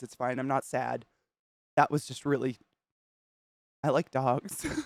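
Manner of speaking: crying happy tears. Reacting to a video of happy dogs, crying happy tears. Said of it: "These are happy te-".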